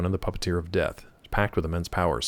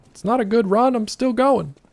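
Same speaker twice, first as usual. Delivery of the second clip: put-on shrill yell, very high and loud; 6 dB louder than usual. Recounting calling after him as he had to leave, retelling a yell. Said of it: "and I'm yelling at him like".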